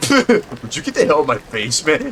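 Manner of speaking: over-the-top, bad nineties anime-dub thug voice. Describing how a man sounds, doing a bad anime-dub thug voice. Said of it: "poor anime dubs you'd hear in the nineties. Like, like some, you know, punk ass thug in an anime".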